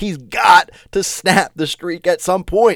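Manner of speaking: fired-up, high, excited screaming. Talking up a driver's chances, screaming into the mic. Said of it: "I'm sorry if I'm screaming here into the mic".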